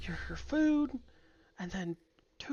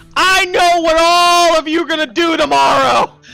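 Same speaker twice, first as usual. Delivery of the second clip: put-on drunken-sounding screaming; 8 semitones higher, 23 dB louder than usual. Describing Rain standing on the table: imitating Rain screaming.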